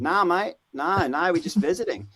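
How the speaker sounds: put-on Australian accent. Replying to a man who asked if he knew them, Australian accent. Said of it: "I tried to speak an Australian accent to him".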